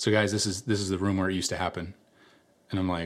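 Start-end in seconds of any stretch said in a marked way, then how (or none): 0.0-1.9 put-on hushed, solemn voice, lower and quieter. Retelling a friend's line in an abandoned building: imitating a quiet somber voice. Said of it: "gets kinda quiet and somber".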